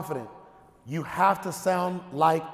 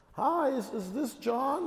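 put-on uncertain salesperson voice, much higher pitched; 8 semitones higher, 5 dB quieter than usual. Speaker mimics a cold-calling salesperson with no certainty; imitating an uncertain salesperson. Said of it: "there's no certainty there".

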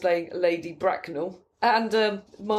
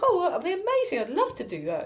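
play-acted very high, casual, swooping gush; 9 semitones higher than usual. Retelling how an actress accepted an offer: imitating casual gushing talk. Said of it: "like the way you would talk".

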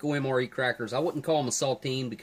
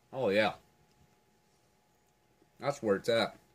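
talking with mouth full; 3 semitones lower than usual. Tasting the dish with cheese and crackers, reacting with his mouth full. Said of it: "Excuse me for talking with my mouth full".

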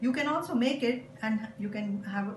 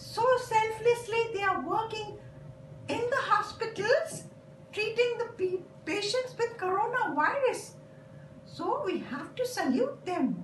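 very high little puppet voice; 12 semitones higher than usual. A puppet explains, in a puppet voice. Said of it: "A puppet is used to explain".

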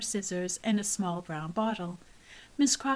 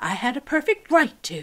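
raised, defensive, self-justifying insistence; 3 semitones higher, 7 dB louder than usual. Narrator reads Miss Crocker adding to Mama, who did not reply, defensive. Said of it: "she added defensively".

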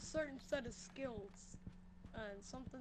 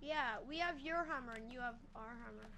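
normal talking voice

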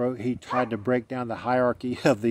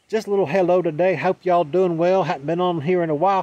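put-on playful, loud, high old country-boy Southern accent; 6 semitones higher, 6 dB louder than usual. Saying hello to everyone after a while away, playful Southern country-boy accent. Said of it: "There's my old Southern accent".

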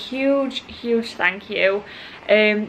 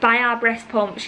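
ordinary delivery

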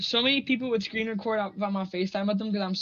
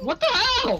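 loud, very high voice crack; 14 semitones higher, 5 dB louder than usual. Reacting in surprise while counting during a game round: voice cracking. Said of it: "Whoa, voice crack".

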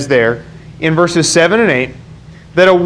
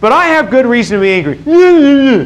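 put-on babyish whine, much higher; 6 semitones higher than usual. Voicing Jonah's complaint from the Bible passage, Jonah as a whiny baby. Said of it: "That's probably what it sounded like".

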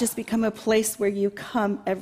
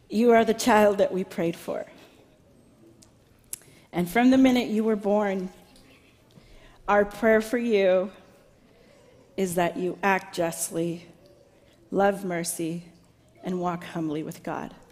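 trying not to cry, holding back tears. Parent speaking directly to their son Micah Samuel, holding back tears. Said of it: "I'll get through this without crying".

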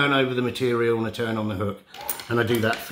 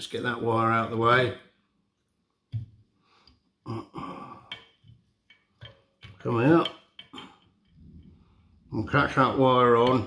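speaking with something in mouth. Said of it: "I'd be pheasant tail in my mouth there, which is why I sounded weird".

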